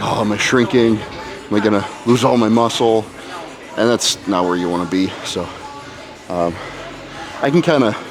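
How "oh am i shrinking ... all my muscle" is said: ordinary delivery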